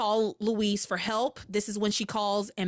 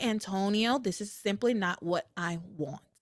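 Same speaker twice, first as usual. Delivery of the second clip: very calm, relaxed delivery. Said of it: "I would very calmly say".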